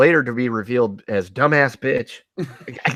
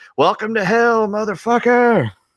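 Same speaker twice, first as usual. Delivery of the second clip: slow, drawn-out, high-pitched yell; 9 semitones higher than usual. Retelling a movie's end scene, imitating Keith David yelling.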